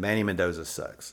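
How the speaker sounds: usual speaking voice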